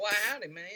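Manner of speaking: imitated Texas accent. Giving an umbrella salesman character a voice, as requested: Texan accent. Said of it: "Can he have a Texan accent".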